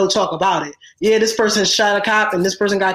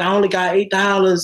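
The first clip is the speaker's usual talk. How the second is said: ordinary talk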